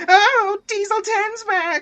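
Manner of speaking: very high, loud, drawn-out terrified shriek. Retelling how Gordon screamed, shaking at the thought of Diesel ten: imitating Gordon screaming. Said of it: "He was screaming".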